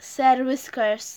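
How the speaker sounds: plain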